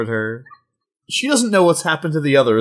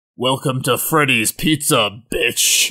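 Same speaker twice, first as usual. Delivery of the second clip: slow growl, taking its time. Voicing a villain who reveals himself to the heroes: growling as Freddy Krueger. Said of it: "the man growls".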